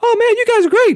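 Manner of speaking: very high-pitched, loud voice. Retell Shannon coming up to you at the side of the stage, in Shannon's really high voice. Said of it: "had a really high voice".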